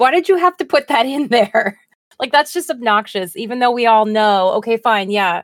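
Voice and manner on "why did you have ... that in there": high, loud, exasperated, fed-up snapping. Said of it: "I'm like".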